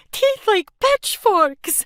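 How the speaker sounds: very shrill, very loud, trembling high cry. Narrator voices a woman who ran screaming to the schoolhouse door; shaky voice. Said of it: "she said in a shaky voice".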